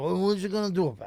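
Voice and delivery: put-on tv mobster accent. Arguing with another speaker about how people talk: Tony Soprano impression. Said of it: "No one ever talked like Tony Soprano".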